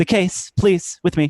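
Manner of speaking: high, tinkling voice. A narrator voices Malashka speaking to the one with the briefcase, in a high tinkling voice. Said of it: "in like a, a high tinkling voice".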